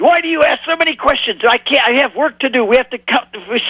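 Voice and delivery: heavy put-on Hebrew accent. Retelling what fishermen said when the speaker kept asking questions; very thick Hebrew accent. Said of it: "sort of in very thick Hebrew accent".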